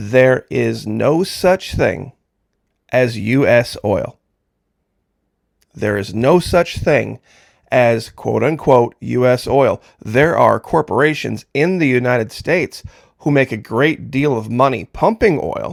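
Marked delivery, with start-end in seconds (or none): 0.0-9.8 slow, deliberate, unhurried, word-by-word delivery. Repeating a point said a million times before, speaking slowly. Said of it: "let me say it slowly".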